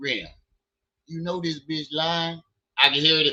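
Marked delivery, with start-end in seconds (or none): 0.0-2.4 disappointed, knowing, let-down tone. Imagining what a disappointed friend is thinking: imitating Trey. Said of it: "He like".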